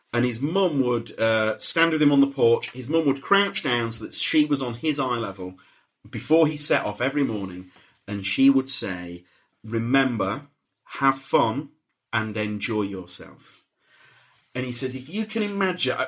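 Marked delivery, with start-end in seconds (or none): 9.6-13.6 slow voice on the edge of tears. Retelling a mother's daily words to her son, nearly crying. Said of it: "that was borderline my first cry".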